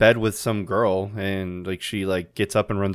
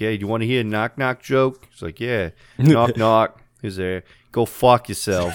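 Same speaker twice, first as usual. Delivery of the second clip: put-on Brooklyn accent; 2 semitones higher, 4 dB louder than usual. Speaker retells Tom Hanks telling a knock-knock joke, Tom Hanks Brooklyn accent. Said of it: "I guess it's more of like a Brooklyn".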